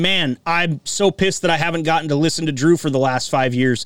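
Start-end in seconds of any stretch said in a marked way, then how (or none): none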